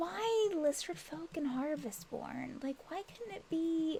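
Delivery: grumbling under the breath. Voicing a character who complains about lizard folk: muttering under her breath. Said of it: "She's saying it kind of under her breath".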